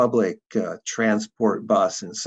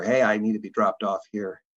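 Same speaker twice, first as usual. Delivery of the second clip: ordinary talk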